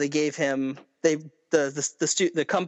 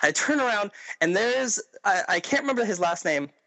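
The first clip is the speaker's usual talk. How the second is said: plain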